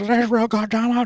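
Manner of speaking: very high, loud, anguished scream. Retelling how a man in agony screamed at the speaker's mom, imitating a man screaming. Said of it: "He was screaming".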